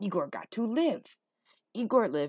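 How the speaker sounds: ordinary delivery, nothing marked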